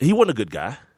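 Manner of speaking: rising stress on "wasn't".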